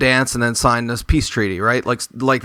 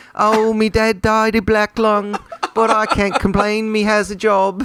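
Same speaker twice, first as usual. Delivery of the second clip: put-on chimney sweep voice, higher; 9 semitones higher than usual. Voicing Gubbins, the little chimney sweep in eighteenth century London: Gubbins voice. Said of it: "That's Gubbins".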